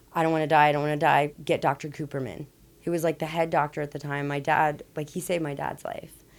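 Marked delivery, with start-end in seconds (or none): none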